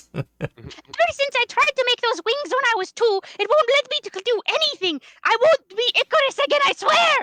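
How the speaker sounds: very high, squeaky kobold creature voice. A player in a game speaks in character, kobold rogue character voice. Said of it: "- a Kobold Rogue named [name] who became a witchlight hand to try to find their lost ability to keep a secret / - a Kobold Rogue named [name] who became a witchlight hand to try to find their lost abi".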